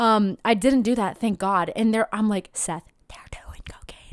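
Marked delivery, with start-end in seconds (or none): 2.5-4.1 hushed yelling done in a whisper. Retelling telling a friend something unbelievable: imitating a whisper-yell. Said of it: "the whisper, yell, scream kind of thing".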